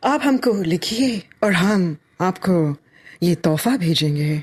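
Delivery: mock sultry radio presenter voice. Retelling a radio presenter's line: imitating stylized sexy radio voice. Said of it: "this stylized, sexy voice".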